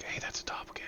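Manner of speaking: whispered voice.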